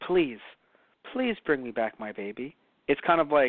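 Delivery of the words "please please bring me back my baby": put-on pleading voice, lower and quieter. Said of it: "Jabba was like".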